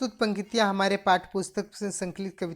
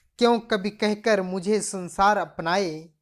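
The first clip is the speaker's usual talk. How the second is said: normal talking voice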